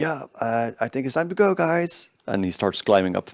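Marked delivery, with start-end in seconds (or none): 0.0-2.1 loud, high-pitched shout rising in pitch. Voicing a character telling the group it's time to go: shouting. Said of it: "shouts at the top".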